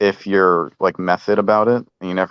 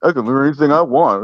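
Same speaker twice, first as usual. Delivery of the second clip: mock smug, self-important, arrogant, pitched-up voice; 7 semitones higher, 3 dB louder than usual. Imitating another speaker's words to tease him: imitating an arrogant tone. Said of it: "you hear the attitude in this guy's voice?".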